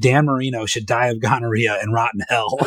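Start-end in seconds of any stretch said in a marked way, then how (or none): none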